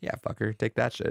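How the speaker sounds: usual speaking voice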